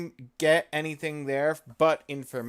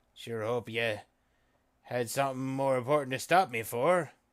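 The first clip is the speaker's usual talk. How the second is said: pirate-talk voice, lower; 3 semitones lower than usual. A character answers someone who stopped him, in pirate lingo. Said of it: "talk so funny".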